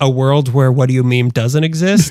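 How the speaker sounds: ordinary delivery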